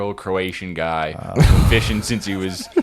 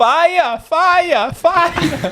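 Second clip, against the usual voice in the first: put-on woman's voice, higher and louder; 5 dB louder than usual. Closing the episode on request: impression of a Chinese lady on fire. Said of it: "impression of the, the Chinese lady on fire".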